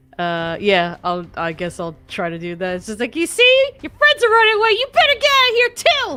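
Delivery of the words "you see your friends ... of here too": very high, very loud, shrill taunting yell. Casting a mocking spell at a fleeing dinosaur: yelling a taunt. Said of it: "you just yell at them".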